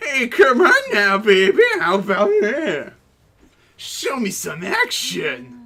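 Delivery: loud, swooping obnoxious jerk character voice. Repeating a line just heard, after calling it obnoxious: imitating an obnoxious voice. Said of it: "Wow, obnoxious voice".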